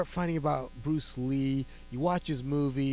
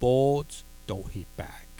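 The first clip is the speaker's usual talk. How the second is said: acted-out flat, mock-deadpan delivery. Recounting a film scene before a face-off, the speaker is retelling a deadpan line. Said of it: "He deadpan looks at Bob Wall and says".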